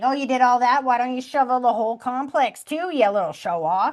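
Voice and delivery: light, playful, teasing tone. Retelling what someone said to a son: imitating someone teasing. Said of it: "almost like he's teasing him".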